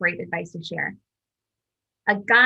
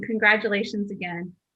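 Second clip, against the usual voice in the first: normal talking voice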